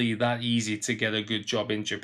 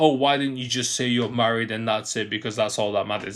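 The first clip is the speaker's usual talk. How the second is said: ordinary talk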